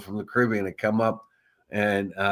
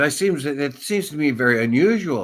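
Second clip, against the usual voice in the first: put-on Nigerian accent, pitched up; 5 semitones higher, 3 dB louder than usual. Retelling what a hotel guest said to the speaker, quoting her in a put-on Nigerian accent. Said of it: "in a Nigerian accent said".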